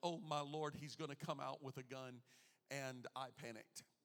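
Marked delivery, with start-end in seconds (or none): none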